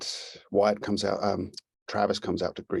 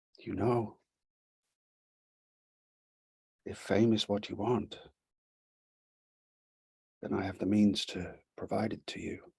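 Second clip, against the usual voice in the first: very soft, softly spoken, low-key voice; 3 dB quieter than usual. Storyteller voicing a woman as she approaches him: very soft voice. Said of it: "says in a very soft voice".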